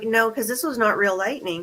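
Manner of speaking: ordinary delivery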